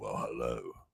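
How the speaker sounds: put-on seductive voice, very low and hushed. Greeting listeners while full of cold: put-on sexy voice. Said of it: "you get me with my sexy voice tonight".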